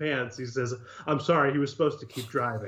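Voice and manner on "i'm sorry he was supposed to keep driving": awkward-sounding tone. Retelling a friend's apology after parking by the theater: imitating an awkward apology. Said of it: "very awkwardly".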